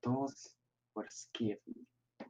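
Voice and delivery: hushed whisper. Voicing Lysaria, leaning in to whisper in another character's ear, whisper. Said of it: "to her ear and whisper like".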